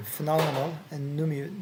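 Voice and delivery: ordinary delivery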